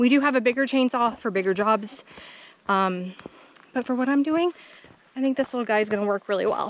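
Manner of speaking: out of breath. Explaining the trail chainsaws after climbing up from below, out of breath. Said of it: "Forgive me for being totally out of breath".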